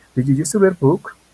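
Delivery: upward lift at the end on book. Teaching how to mark a spoken English question: rising pitch at the end. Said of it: "necesitamos darle la entonación hacia arriba cuando hacemos una pregunta".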